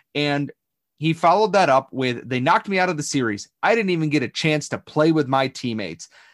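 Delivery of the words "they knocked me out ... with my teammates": normal talking voice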